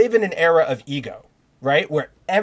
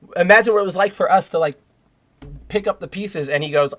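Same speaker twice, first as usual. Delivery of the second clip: normal talking voice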